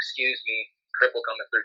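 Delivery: acted, very dejected voice, low, hushed and depressed. Walking back on the sidewalk, a voice comes from behind them: imitating JT Daniels' depressed voice. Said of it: "most depressed voice you could ever hear".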